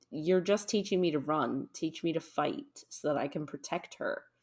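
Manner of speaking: plain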